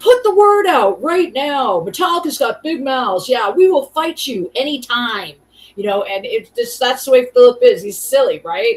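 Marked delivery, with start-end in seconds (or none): 0.0-5.3 loud yelling in fight-promo announcer style. Retelling a video interview where they were yelling: imitating someone yelling. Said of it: "they're yelling".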